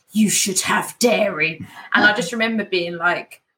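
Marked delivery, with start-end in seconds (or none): 0.1-1.6 hissed, openly annoyed and angry. Retelling an angry customer leaning in about missing dairy: imitating a hiss. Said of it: "she literally hissed at me".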